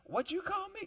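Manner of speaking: very high-pitched, squeaky voice. Showing how the day's topic question must be said: high-pitched. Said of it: "High pitch".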